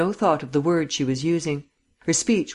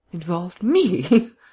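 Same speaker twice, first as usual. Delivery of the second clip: strained, forced, scornful laugh, higher and louder; 3 semitones higher, 3 dB louder than usual. A woman replies to a man's insinuation with a scornful, strained laugh. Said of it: "She laughed scornfully, but it was a strained laugh".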